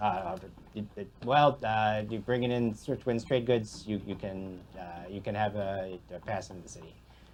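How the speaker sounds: flustered, defeated mumble, backing down.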